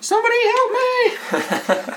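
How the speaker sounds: very high, swooping woman's shriek. Game master narrating a dex-save scene, voicing a lady who screams out: screaming woman's voice. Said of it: "a lady's voice scream out".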